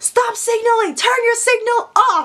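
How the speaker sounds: put-on very high yelling. Speaker re-enacts shouting at a signaling driver from her car: retelling a yell. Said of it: "So I'm yelling as I'm like on the wheel".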